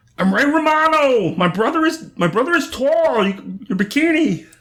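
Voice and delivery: put-on nasal voice. Doing a Ray Romano impression for the others: Ray Romano voice. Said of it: "It's real nasally".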